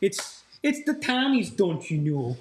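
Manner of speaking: put-on Minnesota accent. Joking about a podcast mate picking a college team, mock Minnesotan accent. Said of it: "the fucking Minnesotan".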